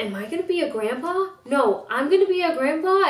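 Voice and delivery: put-on sentimental voice. Retelling her dad's reaction to her ultrasound, imitating a sentimental dad. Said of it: "he was a little more like sentimental".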